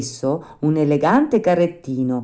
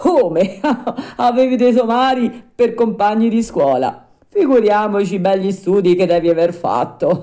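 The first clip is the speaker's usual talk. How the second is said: roaring, laughing shout bursting with laughter; 4 semitones higher, 4 dB louder than usual. Narrator reads a man answering the puppet: shouting while laughing. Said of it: "urlò Giangio dando in una gran risata".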